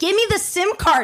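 high-pitched scream, yelling all out. Retelling a fight over a man's sim card, retelling screaming at him. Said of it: "I'm like screaming at him".

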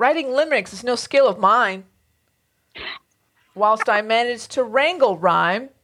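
loud, dramatic slam poetry performance style. Asked to read the poem again but dramatic: dramatic slam poetry delivery. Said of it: "I'm going to do slam poetry stuff".

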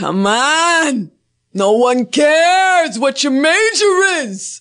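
high, very slow put-on Italian gangster accent. Trying to talk more like an Italian gangster, in an Italian gangster accent. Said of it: "trying to talk more like an Italian gangster".

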